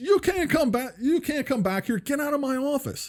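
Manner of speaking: acted-out very high, shrill scream. Retelling a job interviewer ordering him out of the office: imitating a man screaming. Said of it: "he screams".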